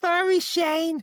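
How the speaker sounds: squeaky lisp, very high-pitched. Retelling a low blow from Mike, quoting his reply in a high-pitched lisp. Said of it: "uh high pitched voice, eh, and a lisp".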